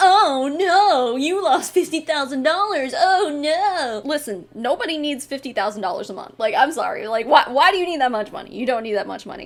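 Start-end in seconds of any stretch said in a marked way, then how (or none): 0.0-4.0 very slow, sneering, sarcastic sympathy. Speaker comments on an audio recording, mimicking Mary's sarcasm. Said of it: "was like sarcastically just being like".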